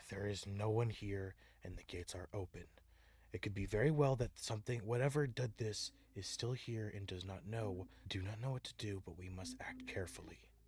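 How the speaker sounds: very quiet, low, careful hushed voice. Popping back in, the player's character addresses everyone in a hushed voice. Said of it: "in a hushed voice".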